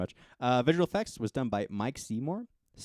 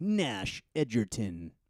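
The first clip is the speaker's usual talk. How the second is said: dramatic movie trailer announcer voice. A film reviewer shows the co-host how an actor's name will be said, movie announcer voice. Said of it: "in the movie announcer voice".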